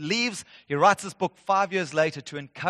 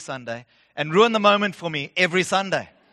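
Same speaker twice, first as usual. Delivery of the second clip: ordinary talk, nothing marked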